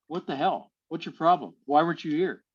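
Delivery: ordinary delivery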